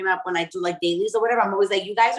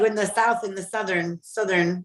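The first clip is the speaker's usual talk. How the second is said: ordinary talk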